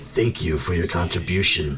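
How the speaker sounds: eerie, menacing, creepy voice. Voicing a creature speaking into a player's mind: creepy voice in your head. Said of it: "creepy voice inside your head".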